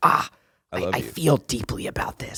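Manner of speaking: bad, raspy put-on actor voice. Retelling a speech about film as a visual medium: Ethan Hawke voice. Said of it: "in that Ethan Hawke way".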